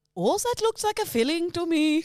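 unhurried, high, slow put-on Swedish accent. Playing a role another speaker calls out: Swedish dentist voice. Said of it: "you're a Swedish dentist".

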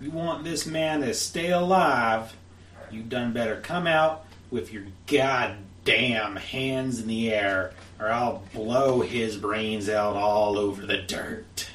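big booming voice, called out wide. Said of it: "calls out in a big booming voice".

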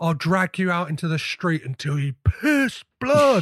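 play-acted, held-back shouted delivery, pitch climbing. Quoting a film line, imitating Nicolas Cage shouting.

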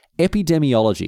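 epidemiology said firmly, landing on a falling tune.

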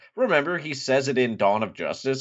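normal talking voice

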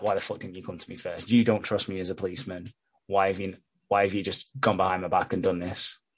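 mock seething, fuming, furious outburst. Retelling the police boyfriend's reaction to being bypassed: imitating a fuming man. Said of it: "he's fucking fuming".

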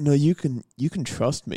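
put-on seductive voice. Describing a voice pack's effect, acting out someone saying it in a mock-seductive tone. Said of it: "the seductive in quotation marks tone".

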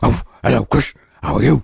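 low, rough-edged cartoon talking-dog voice. Asked to show the dog impression done for the kids, talking dog voice. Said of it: "show me".

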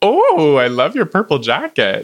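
quirky, upbeat, offbeat cheer, high and swooping. Retelling a stranger's compliment on a purple jacket: imitating an eccentric, positive voice. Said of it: "kind of eccentric and positive voice".

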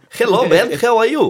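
loud, very high-pitched put-on Russian accent. Greeting a man during a joking bit, in a put-on russian accent. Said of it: "we put on a Russian accent".

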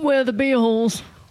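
put-on British accent. Saying the band name in a put-on british accent. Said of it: "a British accent".

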